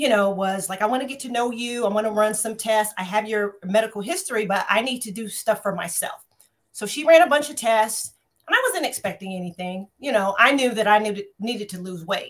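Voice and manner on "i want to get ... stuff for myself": ordinary talk, nothing marked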